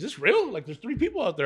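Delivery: put-on disbelieving girly voice.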